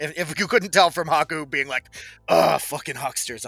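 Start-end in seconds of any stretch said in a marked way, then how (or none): 2.3-3.5 annoyed muttering under the breath. Retelling another player's muttered complaint during a game: imitating muttering under breath. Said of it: "under his breath".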